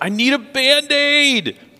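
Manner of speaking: put-on very high-pitched, loud, tearful child's crying wail. Retelling what the four-year-old cried out, imitating a child's crying wail. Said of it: "the crying voice wails".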